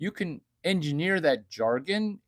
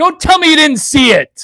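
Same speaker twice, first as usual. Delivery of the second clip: very loud, high-pitched yelling rant; 12 semitones higher, 17 dB louder than usual. Performing a baseball coach's famous yelling monologue: Augie Garrido yelling impression. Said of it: "I'm gonna do the Augie Garrido monologue".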